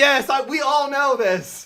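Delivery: high, slow, exasperated know-it-all tone. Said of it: "You're like".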